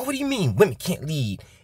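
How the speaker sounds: mock indignant, offended, outraged screaming outburst. Mocking a crowd of followers jumping around someone, mock outraged screaming. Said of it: "screaming like".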